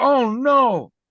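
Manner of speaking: flustered, nervous cry pitched very high. Retelling a man's reaction after the speaker faked a fall: imitating a nervous man. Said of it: "He got all nervous".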